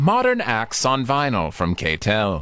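late-night infomercial announcer pitchman voice. Reacting to a vinyl sales figure, the speaker breaks into a late-night infomercial voice. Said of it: "sounds like an infomercial you'd see at 4 a.m".

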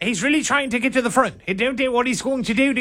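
very high, put-on British commentator voice. Imitating a disliked race announcer for another speaker: imitating a British NASCAR announcer. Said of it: "a British nascar announcer".

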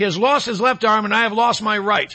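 ordinary talk, nothing marked

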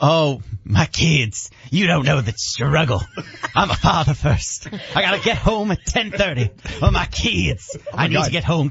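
put-on old-time Southern evangelist preacher accent. A speaker does his impression of Scotty for the group, Southern evangelist accent. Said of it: "you sound like you're from the South in the Civil War".

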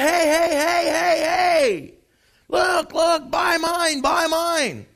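very slow, high, drawn-out hollered screaming. Retelling a man with an empty basket calling for buyers, imitating his screaming. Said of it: "He's screaming".

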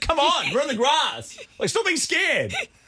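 high, mock yell.

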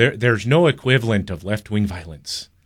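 awful, badly done put-on Irish accent. Quoting a CNN reporter's words: terrible Irish accent as Donie O'Sullivan. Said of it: "That's a terrible accent".

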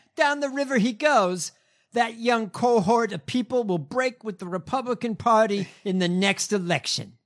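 put-on New York accent. Reading out a lawyer's statement to another speaker: put-on New York accent. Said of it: "I'm gonna give him a New York accent".

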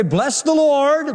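derisive, mocking, very high-pitched voice. Preaching on a scripture passage, the speaker quotes the oppressors' praise as a mocking quote.

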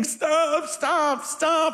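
mock, high-pitched, pleading, begging voice. Retelling being left outside after it got dark; re-enacting own begging. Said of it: "and I'm just begging".

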